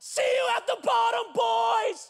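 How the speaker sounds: put-on, very high, full-throated yell at top of lungs. Retelling grabbing a bar before flinging forward, retelling a yell at top of lungs. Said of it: "I yell this at the top of my lungs".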